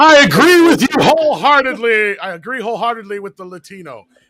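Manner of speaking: shrill, booming, very loud, high put-on fervor. Reading a viewer's message aloud on request: mock fervor. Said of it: "Read it with fervor".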